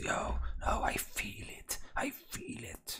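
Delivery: very slow, breathy, hushed whisper. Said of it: "she is whispering to the man".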